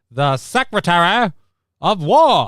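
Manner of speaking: put-on old-timey newsreel announcer voice. Saying the new department title aloud: old-timey news voice. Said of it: "I can't help but say it in, like, that old-timey new".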